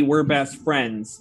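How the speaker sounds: ordinary delivery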